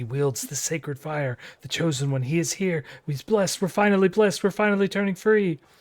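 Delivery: eager murmuring under breath. The narrator voices villagers swarming the hero, in excited hushed muttering. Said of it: "muttering with excited and hushed voices".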